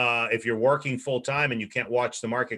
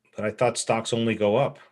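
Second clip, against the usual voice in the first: ordinary talk, nothing marked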